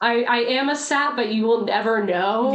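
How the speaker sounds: plain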